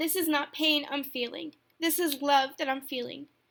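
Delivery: tearful voice, full of tears. Addressing listeners after relaying a comforting message, in a tearful voice. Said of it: "you probably can hear the tears in my voice".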